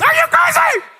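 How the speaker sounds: very high, swooping scolding voice. A speaker on Galatians three repeats the rebuke in a high voice. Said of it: "in that high voice".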